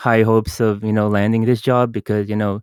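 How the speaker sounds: plain reading voice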